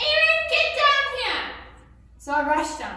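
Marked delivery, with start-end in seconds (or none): 0.0-1.5 shrill, very high, drawn-out shout. Retelling how Mom called them downstairs over a cup left on the table, imitating Mom shouting. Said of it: "my mom starts shouting".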